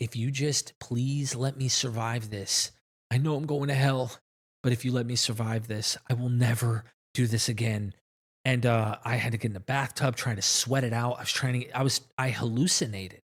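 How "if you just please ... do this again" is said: put-on tearful, crying voice. Telling of a bad high, the speaker reenacts praying in bed: retelling crying to God. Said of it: "I'm crying to God in the bed".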